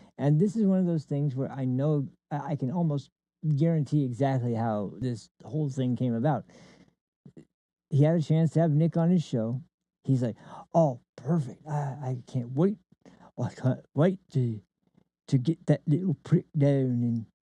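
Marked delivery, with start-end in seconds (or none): 10.8-17.3 typical stock put-on English accent. Acting out a man with a chance to have someone on his show, in a typical English voice. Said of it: "That's a typical English voice".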